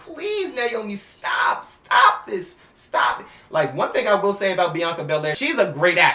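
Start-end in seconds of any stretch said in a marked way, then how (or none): 0.0-3.2 slow, drawn-out, high-pitched weeping, pleading tone. Acting out a wrestler crying and begging a friend to stop: imitating someone crying. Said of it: "She's crying like".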